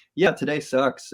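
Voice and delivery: ordinary talk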